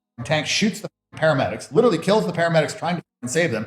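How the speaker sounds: normal talking voice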